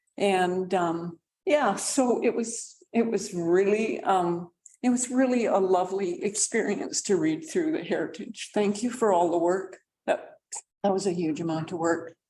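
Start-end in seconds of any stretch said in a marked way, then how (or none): 4.8-12.1 overcome with emotion, quick-paced delivery. Thanking staff for their heritage work at a council meeting, emotional. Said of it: "Excuse me for my emotionality".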